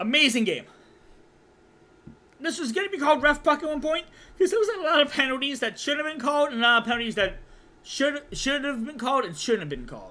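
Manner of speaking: winded, out-of-breath, catching-breath speech. The speaker starts a quick recap of the game, out of breath. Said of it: "because I am out of breath".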